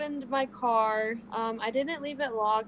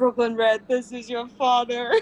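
put-on megaphone announcer voice; 8 dB louder than usual. Telling a story of hiding in a trunk, speaker quotes dad on a megaphone. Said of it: "I hear my dad's voice on a megaphone saying".

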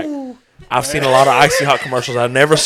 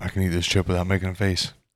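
very low put-on athlete voice; 8 semitones lower, 9 dB quieter than usual. Taking a turn at the table when asked: Shaq impression. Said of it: "Shaq impersonation right now".

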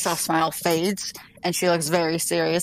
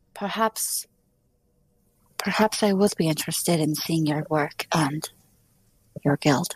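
gentle, low-toned voice. A player's character looks over at Ardwin and speaks in a soft, low voice. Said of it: "in my soft, low voice".

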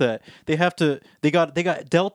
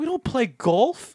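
joking, put-on Scottish accent, higher pitch; 8 semitones higher than usual. Imagining a Scottish panelist objecting to a stereotype, in a Scottish accent. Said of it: "have you seen my Scottish accent?".

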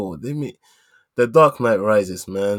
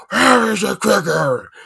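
very high, muffled, mushy-mouthed, creaky rasp; 10 semitones higher, 4 dB louder than usual. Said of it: "it just sounded like he has something in his mouth".

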